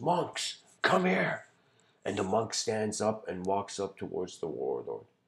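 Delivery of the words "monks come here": very high, loud shouted delivery. Retelling a parable, voicing the warlord calling the monk: imitating a warlord shouting. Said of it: "he just shouts".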